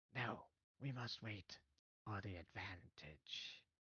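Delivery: very quiet, slow, whispered kobold voice. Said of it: "And another one says".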